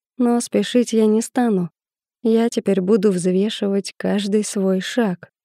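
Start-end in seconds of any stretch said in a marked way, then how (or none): none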